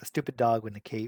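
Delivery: taunting, muttered half-whisper under the breath. Retelling a movie line, imitating Lex Luthor half-whispering. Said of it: "he's, like, whispering that".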